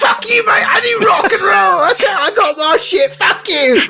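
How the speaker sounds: very high, squeaky goblin creature voice. Giving a line or two in character when asked: goblin voice. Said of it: "a line or two of our Gerblin voices".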